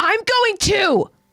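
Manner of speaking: very high, resolute, angry, determined. Reading Gabi telling Colt she is going too: pissed off, determined Gabi. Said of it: "A pissed off and determined Gabi tells Colt".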